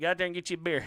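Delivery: rural southern-style voice. Showing the impression of a family friend: redneck impression. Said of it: "that fucking mean-ass impression you do of him".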